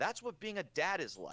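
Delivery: mock-impressed reaction. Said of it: "I was like".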